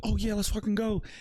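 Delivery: very high-pitched, fired-up, excited hype voice. Explaining how excited players sound on the mic, excited, voice going higher. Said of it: "your voice gets a little bit higher because like you're excited".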